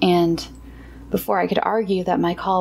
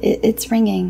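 abashed, sheepish, higher pitch; 2 semitones higher than usual. First-person narrator looks up and speaks to the man while a call rings: sheepish. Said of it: "said sheepishly to him".

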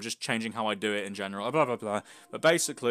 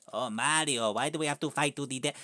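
cartoonish exaggerated Italian accent voice; 2 semitones higher, 3 dB quieter than usual. Doing a bit addressing Mario, in a Luigi voice. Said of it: "Luigi voice".

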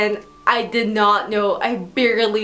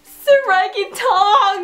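put-on tearful, high-pitched sobbing, like a child; 11 semitones higher, 5 dB louder than usual. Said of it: "I fall crying on my knees".

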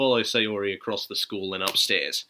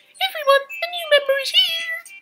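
very high, loud, peppy, full of energy; 6 dB louder than usual. Reading the story aloud, Sayori swings open the classroom door, full of energy. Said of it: "full of energy".

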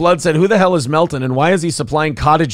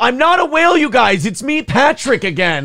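high-pitched, embarrassed, humiliated yell; 9 semitones higher than usual. Acting out a big man on the beach insisting he is not a whale: imitating someone yelling. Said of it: "he has to yell".

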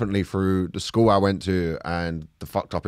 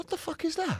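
high, quiet startled yelp. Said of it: "I was like".

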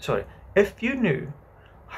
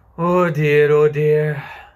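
sighing, louder; 9 dB louder than usual. Telling the children a story after their interruptions, a girl says it sighing. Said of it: "sighed Wendy".

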